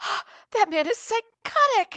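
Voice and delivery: very high, loud, breathless, panting delivery. Retelling a scene where a character arrives after running: Simon panting. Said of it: "panting, and he's like".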